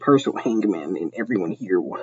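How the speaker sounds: ordinary delivery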